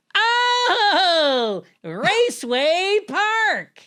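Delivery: very high, shrill announcer scream, drawn-out oh. Recalling an ad's announcer, the speaker imitates his weird high-pitched scream. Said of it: "screamed in a weird high pitched voice".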